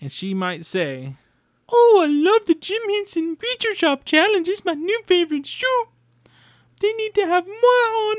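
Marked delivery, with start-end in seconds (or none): 1.7-8.2 bad, clumsy, very high, put-on puppet voice. Closing the episode with a bad Miss Piggy impression. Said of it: "a bad impression of Miss Piggy".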